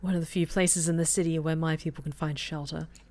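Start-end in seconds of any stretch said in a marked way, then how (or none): none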